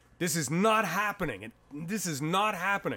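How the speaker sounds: high-pitched, half-shouted, held-in put-on scream. Retelling a defenseman screaming on the bench during a timeout: imitating someone screaming. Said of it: "he starts screaming".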